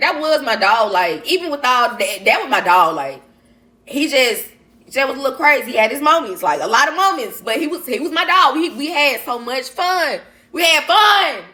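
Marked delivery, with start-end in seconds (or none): 7.4-11.3 raised-voice yelling, high and drawn out. Speaker telling listeners about his dog, apologizing for the volume; yelling. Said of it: "sorry if I'm yelling".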